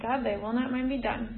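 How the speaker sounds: ordinary talk, nothing marked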